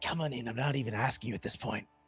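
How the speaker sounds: put-on old hag voice. Contrasting a hag with a witch, voicing the hag: hag voice. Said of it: "And a hag's like".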